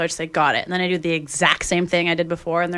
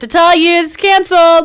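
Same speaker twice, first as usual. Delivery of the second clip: very loud, very high, sloppy fake drunk slurring; 11 semitones higher, 12 dB louder than usual. Joking that the next guest's appearance is canceled: fake drunk slurring. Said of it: "She's slurring her words".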